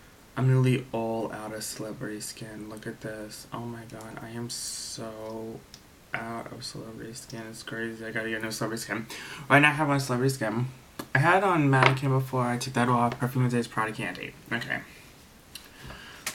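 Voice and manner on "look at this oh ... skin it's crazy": very soft, low, hushed talking. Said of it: "I'm talking a little low 'cause it's really late at night".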